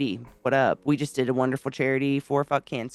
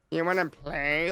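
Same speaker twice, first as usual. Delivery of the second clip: put-on childlike little-kid voice; 3 semitones higher, 3 dB quieter than usual. Retelling how she clams up and asks to play: imitating a five-year-old. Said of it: "Like they're five years old".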